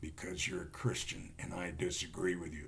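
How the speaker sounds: creepy, very low, hushed, soft voice. Retelling a threatening exchange, the speaker voices Michael in his really weird voice. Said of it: "this really weird voice said".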